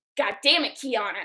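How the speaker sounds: angry burst of speech. Retelling how Grandma reacted on seeing the tattoo: imitating Grandma freaking out. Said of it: "she freaked out on me".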